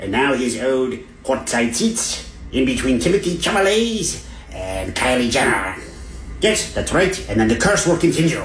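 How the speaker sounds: spooky voice.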